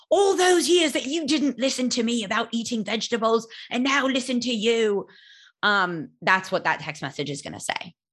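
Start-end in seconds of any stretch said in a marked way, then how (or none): 0.1-5.1 put-on English accent with a gloating, told-you-so tone. Imagining a friend's told-you-so text message, read in an English accent. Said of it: "he does it in an English accent".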